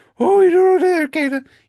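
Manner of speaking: very high, loud, mocking jeering tone. Speaker recounts being mocked in front of the class, imitating Mr. Duquette's high mocking. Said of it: "he kind of did the high pitched like".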